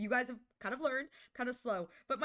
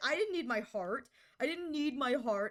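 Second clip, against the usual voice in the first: mock sobbing, fake crying. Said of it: "I say as I sob my brains out".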